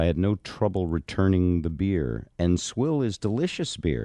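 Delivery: ordinary talk, nothing marked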